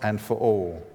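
plain reading voice

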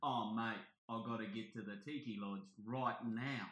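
clumsy, bad put-on Australian accent. Complaining that a show changed a character's voice, imitating it: bad Australian accent. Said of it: "like the bad Australian accent".

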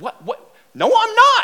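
put-on very high, fearful, drawn-out, rising voice. Retelling refusing the pastor's order: imitating own scared protest. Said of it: "this fear just wells up inside of me".

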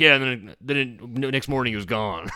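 put-on Southern accent, drawled. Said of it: "making that voice".

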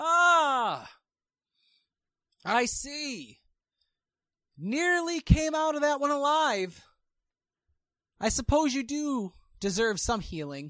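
very high, swooping, drawn-out, booming announcer voice. Narrating a scene, a voice booms out over the cheering crowd: booming voice. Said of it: "you hear the voice overcome this cheering, booming".

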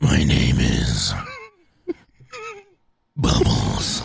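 very low, very slow, rough, mean snarling growl. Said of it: "most aggressive, mean voice you can".

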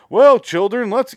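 shrill, loud, blaring drone held on one high note. Imitating a YouTube family who say every line in the exact same tone. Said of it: "they all talk in the exact same tone".

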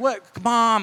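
put-on mortified, embarrassed kid voice pushing back. Retelling a son's reply to his mother at a wedding: imitating an embarrassed kid. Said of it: "it's almost like an embarrassed kid moment".

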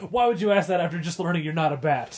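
frustrated tone. Retelling a character's line from an episode: imitating a frustrated question. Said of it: "very frustratedly says".

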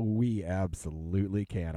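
gleeful, joyful voice. Agreeing that Oscar season has started: glee and joy in voice. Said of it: "I say that with glee and joy in my voice".

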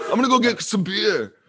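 put-on very high-pitched, botched Scottish accent. Retelling a man's words in a story: bad Scottish accent. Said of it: "I'm doing my Scottish accent so bad".

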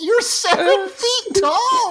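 very high, slow villain voice.

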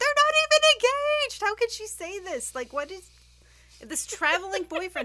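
shrill, very loud, full-volume, high-pitched yelling. Retelling own reaction to someone saying future husband: imitating own yelling. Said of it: "and I was yelling".

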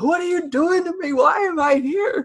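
yelled cries at the very top of the voice, pleading. Describing a scene heard through a locked door: Marky yelling. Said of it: "yelling and being like".

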